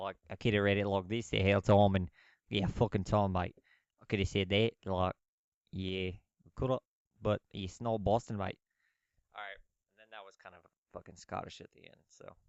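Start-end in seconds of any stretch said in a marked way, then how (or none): 0.0-8.6 put-on Australian accent, louder and slower. Speaker telling the other speaker he does Australian better than Boston: Australian accent. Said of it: "like an Australian accent much better, mate".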